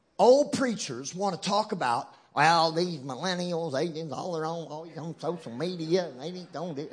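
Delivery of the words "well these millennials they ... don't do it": put-on Texan preacher voice, quieter. Speaker mimics old preachers complaining about millennials, in a texan accent. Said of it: "That's how they talk in Texas".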